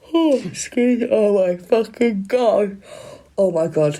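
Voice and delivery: very slow words, yawned through. Talking about an arrest in a case, speaking through a yawn. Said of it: "remove your yawn".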